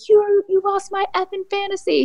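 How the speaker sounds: play-acted, shrill, very high screaming fan. Retelling how a fan reacted to a lost fantasy league: imitating a fan screaming. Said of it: "screaming at him".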